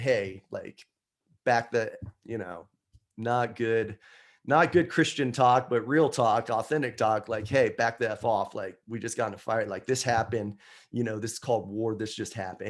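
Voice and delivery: ordinary talk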